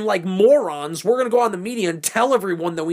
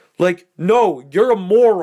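normal talking voice

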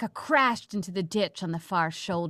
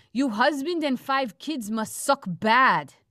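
put-on Russian-accented broken English, pitched up; 5 semitones higher than usual. Voicing a caller reacting to a voicemail greeting, in a put-on accent. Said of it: "Nice accent work".

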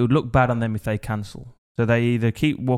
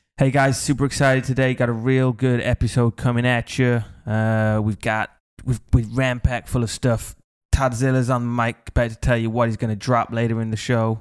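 put-on American accent. Redoing the show intro when the co-host says to imagine being american, fake american accent. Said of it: "Imagine you're American".

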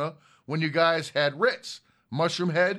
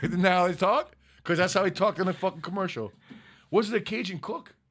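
plain

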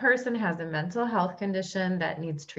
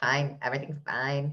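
lower robotic voice; 4 semitones lower than usual. Quoting a cartoon meme about everything burning: robot voice. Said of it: "That's the robot voice in my head".

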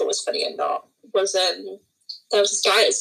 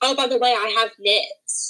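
put-on shouting; 2 semitones higher than usual. Retelling shouting to a boy who took her tiara, retelling a shout. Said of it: "So I shouted to him".

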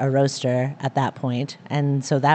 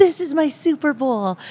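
very high-pitched, thrilled and excited delivery; 12 semitones higher than usual. Retelling what was said to people this weekend: imitating own excited voice.

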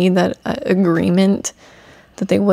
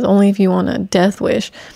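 ordinary delivery

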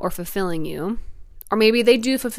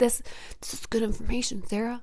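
put-on dog voice, quieter; 3 semitones higher, 8 dB quieter than usual. Laughing because her dog James keeps staring at her, James the dog's voice. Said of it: "It's my dog voice".

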